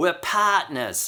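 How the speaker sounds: put-on high-pitched Australian accent. Speaker quotes the gyrocopter pilot in Mad Max rescuing him, in a Mad Max gyrocopter pilot Aussie accent. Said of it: "that's my spot on Aussie accent".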